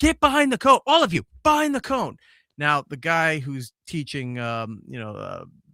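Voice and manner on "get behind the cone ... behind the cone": play-acted yell, very high and shrill. Retelling telling a kid at practice to get behind the cone: imitating himself yelling. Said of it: "I'm sitting there yelling".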